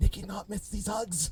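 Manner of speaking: very quietly. Narrating a role-play scene, the speaker voices a character's line very quietly. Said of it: "Nikki very quietly goes".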